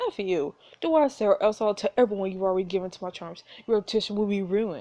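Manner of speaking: ordinary talk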